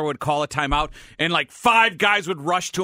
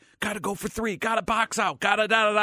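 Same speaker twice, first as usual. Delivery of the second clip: whispered delivery, higher pitch; 4 semitones higher than usual. Retelling assistant coaches crowding the coach at a timeout: imitating assistants whispering. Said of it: "whispering stuff".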